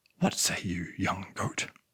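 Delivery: deep, low grumbling voice. Reading a story, a voice from the shadows speaks to Miguel: deep grumbling voice. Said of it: "A deep voice grumbled from the shadows".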